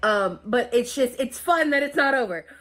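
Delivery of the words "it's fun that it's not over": very sarcastic, pitched-up tone. Talking about needing more medical testing: sarcastic. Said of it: "That's very sarcastic".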